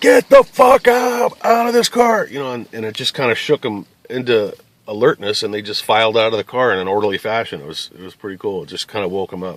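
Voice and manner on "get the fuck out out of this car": very high, drawn-out yell at full lung power. Telling how people in a car about to catch fire wouldn't move, retelling a top-of-lungs yell. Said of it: "I yell at the top of my lungs".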